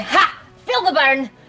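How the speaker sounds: cackling. A player on their turn in a game taunts a flame: cackling. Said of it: "I'll just cackle at it and say".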